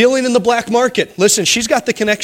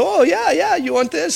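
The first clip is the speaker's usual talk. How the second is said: atrocious fake Mexican accent, much higher pitch; 6 semitones higher than usual. Retelling a store clerk in mexico offering a purse, atrocious mexican accent. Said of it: "my Mexican accent is absolutely atrocious".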